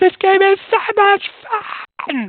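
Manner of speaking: put-on very high, loud, screeching child's scream. Retelling what a kid in a game room yelled: imitating a kid screaming. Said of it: "this kid scream at me".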